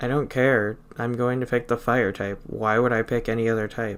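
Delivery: ordinary talk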